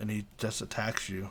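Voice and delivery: ordinary talk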